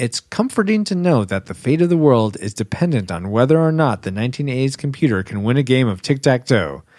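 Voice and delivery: ordinary talk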